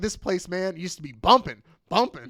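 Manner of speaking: jittery, wired ranting. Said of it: "it's cocaine-fueled rant".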